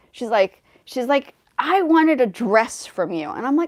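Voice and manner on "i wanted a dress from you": all worked up, huffy, freaked-out outburst. Retelling a young lady's reaction to being refused a dress: imitating someone freaking out. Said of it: "and then she freaked out on me".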